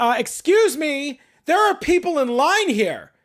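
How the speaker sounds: mock, very high, slow, mad, upset tone. Retelling what an upset man in the bank line said: imitating an upset man's tone. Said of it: "Just like that. Not exaggerating".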